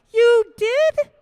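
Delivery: tiny, sweet, very high and loud voice. Retelling a kid answering through the door about munchkins: sweetest little voice. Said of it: "you hear the sweetest little voice that comes out".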